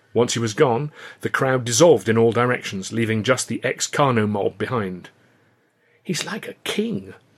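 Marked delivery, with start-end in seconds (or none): 6.1-7.2 soft, pitched-up, awed marvelling. Reading a man watching someone sweep importantly into a building: marvelling. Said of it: "Luscombe marvelled".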